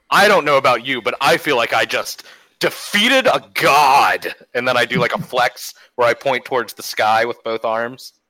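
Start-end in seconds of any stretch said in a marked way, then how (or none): 0.1-4.3 triumphant thunderous boom, "god" drawn out. Retelling what they said in the moment, in a thunderous voice. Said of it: "In my thunderous voice".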